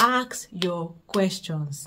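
ASK stressed and drawn out, every word very slow.

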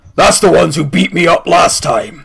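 fiery demon character voice. Voicing a fiery creature pointing out the group: fiery creature voice. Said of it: "he points at you guys and goes".

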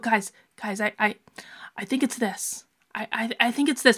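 very soft-spoken. Describing how quiet team members finally speak up, in a really soft voice. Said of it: "they do it in that really soft voice".

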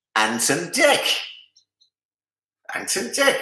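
terrible put-on Geordie lilt, sing-song and high. Quiz host reading out the answer to question three, in a terrible geordie accent. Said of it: "That was a terrible Geordie accent".

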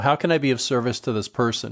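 normal talking voice

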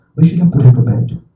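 normal talking voice

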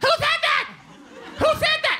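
put-on very high, terrifying, shrieking toddler voice. Retelling a man's outburst, not calm and menacing: imitating a terrifying toddler. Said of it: "a terrifying toddler".

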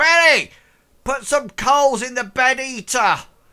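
mock bellowing. Retelling how she calls across the room to Betty, retelling a bellow across the room. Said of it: "she like bellows across the room".

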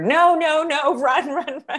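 very slow, very high, drawn-out screaming yell. Retelling screaming at her daughter while filming, acting out the scream. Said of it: "I'm screaming at her".

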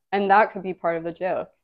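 ordinary talk, nothing marked

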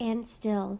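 plain reading voice

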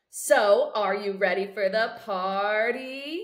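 slow, playful, teasing tone. Narrator voicing Amal as the group walks toward her home, teasing. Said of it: "Amal teases".

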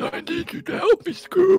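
very high voice of a dying man, pleading. In a role-play where Shaggy is dying, he pleads with Scoob: dying Shaggy voice. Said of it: "Shaggy is dying of cancer".

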